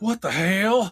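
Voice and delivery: play-acted shrill, very high yelled outburst. Retelling how an actor in a film yells a line: imitating Danny Hicks yelling. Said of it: "he yells".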